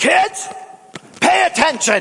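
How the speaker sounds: very high, scary, preaching dad voice. Retelling how dad broke off preaching to address the kids; imitating dad's scary voice. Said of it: "that voice is the scary voice that my dad has".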